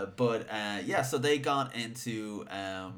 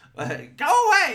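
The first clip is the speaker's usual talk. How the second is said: put-on old woman voice, much higher, louder; 13 dB louder than usual. Recalling the voice they did for the old lady Magadha, Magadha old-lady voice. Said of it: "With an old voice".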